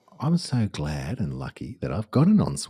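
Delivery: ordinary delivery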